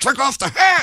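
mock really pissy tone, pitched way up. Retelling a guy at a club telling him to take off his hat, pissy. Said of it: "real pissy".

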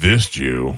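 mad, aggressive, angry-sounding delivery. Imitating how Joe says a clue in the game: imitating Joe sounding mad. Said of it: "like you're mad at them".

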